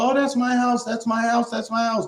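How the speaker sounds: acted, frantic, high-pitched screaming with words repeated. Retelling how old women scream to people about their house: imitating women screaming. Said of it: "they're screaming to people".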